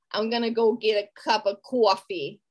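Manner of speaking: put-on Long Island accent. Discussing a movie's accents, the speaker demonstrates a Long Island accent. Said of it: "That's Long Island".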